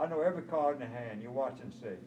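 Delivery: ordinary delivery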